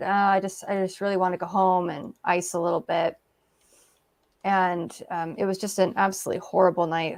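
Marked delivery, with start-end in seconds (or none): none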